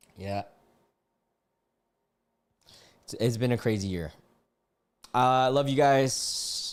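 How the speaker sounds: holding back tears, fighting them. Thanking the audience for their support, holding back tears. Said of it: "I'm trying really hard not to cry".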